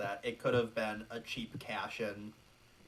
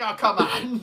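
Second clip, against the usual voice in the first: high, loud, taunting tone. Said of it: "Pesci's taunting him".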